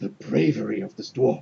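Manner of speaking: muttering under the breath. A game master voicing guardsmen glancing sideways at the player's dwarf, muttering under breath. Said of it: "sort of mutter under their breath".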